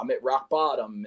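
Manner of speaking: normal talking voice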